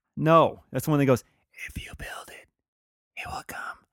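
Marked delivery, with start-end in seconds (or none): 1.6-3.5 soft, hushed, breathy whisper. Quoting a movie line as the characters discuss it: Field of Dreams whisper. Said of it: "like, whispering and stuff".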